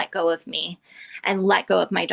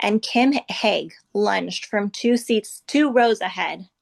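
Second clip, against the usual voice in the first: ordinary talk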